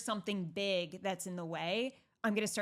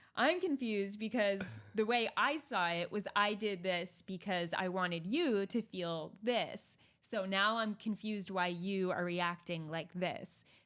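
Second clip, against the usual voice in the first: plain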